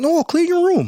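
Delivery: put-on Canadian accent, pitched very high. Quoting what he is famous for saying, doing a Canadian Jordan Peterson impression. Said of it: "that was my like Canadian".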